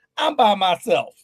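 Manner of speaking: plain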